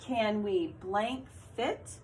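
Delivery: questioning rise in pitch on fit. Reading a sight-word sentence with a question mark, rising pitch on fit. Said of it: "Notice that's a question mark, so my voice went up".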